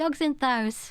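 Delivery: imitated northern English dialect. Explaining how their dad talks, imitating their dad's dialect. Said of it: "my dad will say Thous".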